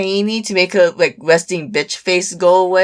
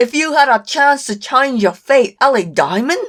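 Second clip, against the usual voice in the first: bad put-on Scottish accent, pitched up; 5 semitones higher than usual. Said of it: "Scotland accent!".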